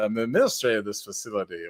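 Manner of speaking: smooth, suave, charming voice. Showing a favorite impression, smooth-talking Lando voice. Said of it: "Lando just comes off as the smooth talking".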